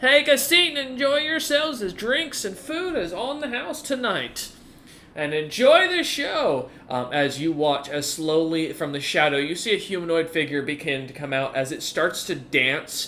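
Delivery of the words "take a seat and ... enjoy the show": loud resonant voice. Voicing a voice that welcomes newcomers to a show: booming voice. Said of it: "a voice start to boom".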